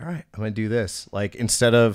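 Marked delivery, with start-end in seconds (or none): none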